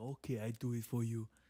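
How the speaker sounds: clumsy fake Dominican accent, soft. Retelling his reply to a request, bad Dominican accent. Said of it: "I don't even know how to do a Dominican accent".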